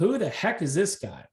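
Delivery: plain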